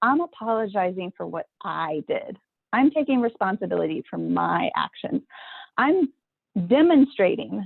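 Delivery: ordinary talk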